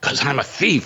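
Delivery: hushed secretive whisper. Telling a story about a radio host's late-night caller and voicing the caller: retelling a whisper. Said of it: "Why are you whispering?".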